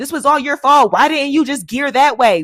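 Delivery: very loud, high, furious, angry screaming. After both fall off the lift, retelling what he screamed, retelling a scream. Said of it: "he's screaming".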